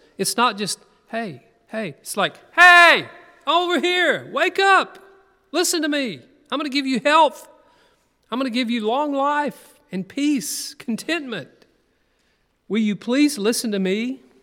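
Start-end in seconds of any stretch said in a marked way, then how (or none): 2.5-14.2 raised, high-pitched calling out. Speaker acting out Wisdom calling to people to listen, calling out. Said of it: "Does not understanding raise her voice?".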